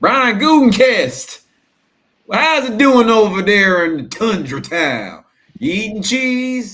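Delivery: high and loud holler. Acting out an imagined trade phone call, as Jerry Jones. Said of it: "I can tell you how this one went".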